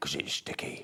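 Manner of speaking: creepy, sinister, breathy whisper. Answering why only a little glue is used: sinister. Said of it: "That sounded very sinister when I said that".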